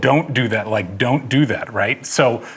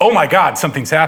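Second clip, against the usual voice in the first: alarmist, alarmed voice; 4 semitones higher, 3 dB louder than usual. Showing how the same words convey a different emotion: alarmist delivery. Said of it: "alarmist and go".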